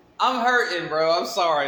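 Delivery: breaking up with laughter mid-sentence. Apologizing to viewers before telling a story, laughing while talking. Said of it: "I'm laughing because".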